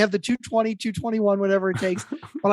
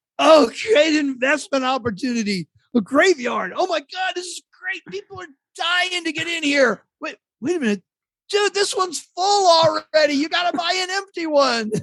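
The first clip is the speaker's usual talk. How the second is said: put-on really drunk, rambling man's voice, pitched up; 8 semitones higher than usual. Retelling a funny moment when he was really drunk, imitating a drunk man. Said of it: "he was like really drunk".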